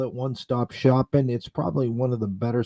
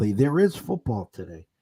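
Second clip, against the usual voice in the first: sarcastic, sardonic tone. Announcing that there is football today: sarcastic. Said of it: "I'm saying this sarcastically".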